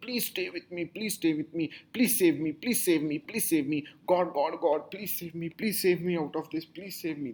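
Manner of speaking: mock desperate pleading, repeated over and over. Describing how people beg and plead when they feel they will die: imitating someone begging and pleading. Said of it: "They will beg and plead".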